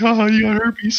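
acted mocking laughter. Retelling how a man answered a woman: imitating laughing in someone's face. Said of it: "laughed in her face".

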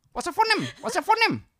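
very loud, shrill screaming in fake Indian accent. Retelling someone screaming a question at a man, retelling a scream, fake Indian accent. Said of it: "10 minutes of just screaming at him".

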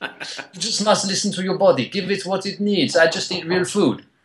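put-on French accent. Retelling what a very cool Frenchman told you, in a put-on French accent. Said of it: "What the accent was".

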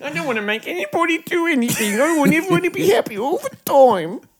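very high, sneering, mocking parody voice. Repeating the other speaker's answer back to tease him: mocking imitation of the other speaker. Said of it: "He's such a fucking loser".

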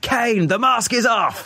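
very high, drawn-out screaming. Fan recalling a goal he saw at the game, retelling a WWE-commentator scream. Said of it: "I was screaming".

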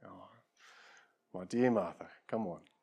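put-on gentle, soft, forgiving, merciful kindness. Voicing Jesus answering Martha: merciful tone as Jesus. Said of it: "You can almost hear the tone in his voice".

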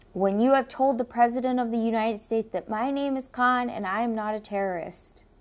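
plain

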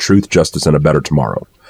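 plain

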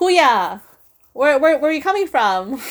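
loud yell. Retelling how she called out to some people she saw, retelling a yell. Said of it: "I just yelled out".

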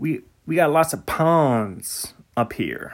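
New England accent, put on. Musing about all the ponds in new england: new england accent. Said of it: "That's my New England accent".

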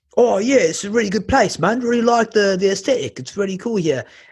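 put-on Cockney accent. Telling a pub story, quoting working-class guys who came in: Cockney accent. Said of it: "Hope that was a good Cockney accent".

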